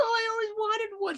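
tearful, weepy, sobbing, crying voice. Retelling how a woman reacted when shown a doll, mock crying. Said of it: "She starts crying".

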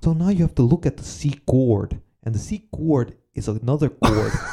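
put-on English spoken with a Dutch accent. Describing a Dutch guitar teacher on YouTube, imitating his Dutch accent. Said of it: "Can you do a Dutch accent?".

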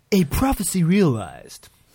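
put-on voice, high, loud, swooping, swinging, played up. Doing an impression of Keith: Keith impression. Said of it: "I was trying to do a Keith impression".

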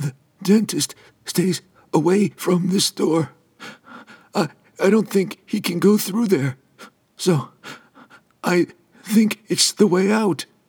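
very high, faint, hoarse, weak voice. Narrator voicing an EMT telling Franklin the way out: hoarse, weak voice. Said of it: "This person wore the uniform of an emergency medical technician. ... His voice was hoarse and weak".

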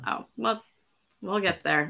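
beaten-down, defeated, resigned tone. Talking about slowly working through the Silmarillion, a speaker answers: defeated tone. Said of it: "you sounded so defeated when you said this".

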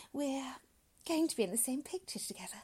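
bashful delivery. A woman answers a doctor who greets her, shy. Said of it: "she said shyly".

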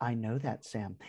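utterly condescending, superior, talking-down tone. Retelling Frodo's reply to Sam, in a mock-condescending Frodo voice. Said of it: "In the most condescending way".

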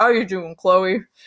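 deep voice, dropped way down, pitched low. Retelling meeting a wrestler backstage, imitating Omos's deep voice. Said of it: "his deep voice is like".

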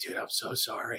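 very soft, breathy, barely voiced whisper. Retelling a buddy in the next cell apologizing: imitating a whisper. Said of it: "whispering through the cell".

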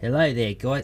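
put-on Australian accent. Told by the other speaker to read it in an accent, Australian accent. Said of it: "why am I doing Australia?".

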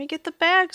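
high-pitched, protesting, pulling back. The maestro, pulled by the sleeve toward the door, protesting. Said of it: "he protested".

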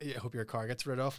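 normal talking voice

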